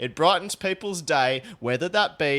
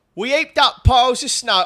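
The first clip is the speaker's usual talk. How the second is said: very high, loud put-on South London accent; 9 semitones higher, 7 dB louder than usual. Trying out an accent on the spot for a line; South London accent. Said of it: "South London".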